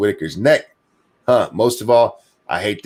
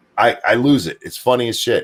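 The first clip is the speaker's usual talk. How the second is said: ordinary delivery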